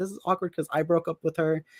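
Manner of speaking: plain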